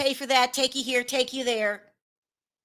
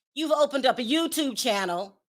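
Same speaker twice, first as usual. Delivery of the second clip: ordinary talk, nothing marked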